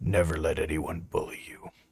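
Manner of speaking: soft, hushed whispered word. Before he goes off, the speaker's character whispers to him: whispering. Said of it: "I whisper to him".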